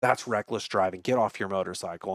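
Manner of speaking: plain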